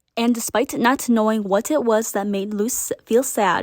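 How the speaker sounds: plain reading voice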